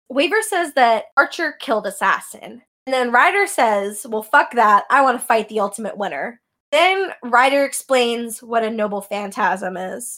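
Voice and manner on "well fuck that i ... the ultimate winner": plain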